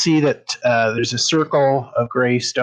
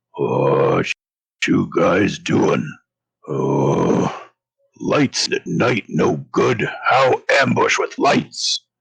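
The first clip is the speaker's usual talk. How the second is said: very low, creaky, rough, far-off deep rumble; 7 semitones lower than usual. As dancing lights appear, a voice calls to the group: rumbling voice from far away. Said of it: "you hear a rumbling voice from far away say".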